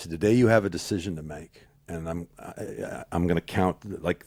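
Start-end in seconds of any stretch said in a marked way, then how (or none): 0.1-1.7 very stern, firm, no-nonsense delivery. Retelling what he said to the speaker: imitating a stern voice. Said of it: "he got real stern with me".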